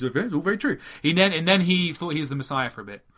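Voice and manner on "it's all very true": dead calm, unbothered delivery. Retelling an interview, imitating David Icke: calm David Icke impression. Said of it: "and he talks like this".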